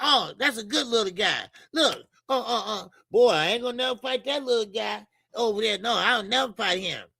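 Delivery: mock-sarcastic, imitated sarcastic tone. Speaker retells what Tank said about never fighting someone's son, retelling a sarcastic remark. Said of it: "he was being sarcastic".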